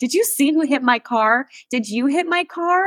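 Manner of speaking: high-pitched, furious, aggravated screaming. Retelling screaming at the person inside a car: imitating own past screaming. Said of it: "screaming at the person inside the car".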